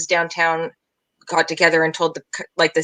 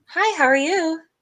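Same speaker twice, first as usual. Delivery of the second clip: very high, sweet, polite customer service voice; 11 semitones higher than usual. Discussing hostess voices, a speaker demonstrates their customer service voice. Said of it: "it's your customer service voice".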